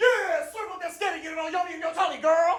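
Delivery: mock very high-pitched, hyped-up hype-man cheering. Retelling echoing his wife to his kids: imitating his own hype-man cheering. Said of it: "I'm a hype man".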